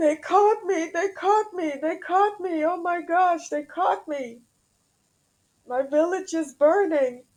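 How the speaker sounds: put-on, very high-pitched, tearful sobbing distress. Retelling a hypnosis subject's past-life memory of being caught, imitating someone crying. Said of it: "he's crying during this hypnotherapy".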